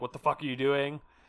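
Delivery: ordinary delivery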